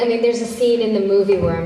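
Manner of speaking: normal talking voice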